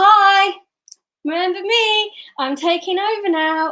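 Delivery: loud, bright, high chimp voice, drawn out. Explaining the chimp part of the brain taking over, loud chimp voice. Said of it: "I'm like bright and shiny and I'm loud".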